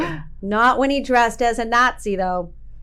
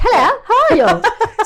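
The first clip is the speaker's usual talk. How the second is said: very high, slow, drawn-out put-on British accent; 10 semitones higher, 6 dB louder than usual. Describing a wife's British relatives, imitating how they talk with a British accent. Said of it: "they talk like this".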